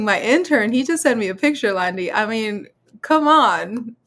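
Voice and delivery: words broken by helpless giggling, talking through laughter. Telling another speaker about a picture an intern sent, laughing while talking. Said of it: "I can't stop laughing".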